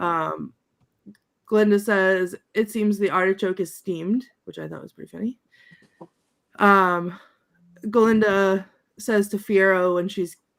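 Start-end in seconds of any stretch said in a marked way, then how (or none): none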